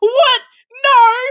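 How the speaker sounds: high, shrill scream in the loudest voice. Retelling a concessions worker screaming during the movie: imitating a loud scream. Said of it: "screams in the loudest voice going".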